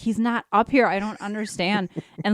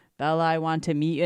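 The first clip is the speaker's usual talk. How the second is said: put-on deep, crazy demonic voice, quieter; 5 semitones lower, 4 dB quieter than usual. Speaker retells a fake voice calling her name through a door, deep crazy voice. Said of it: "the voice changes to this deep, crazy".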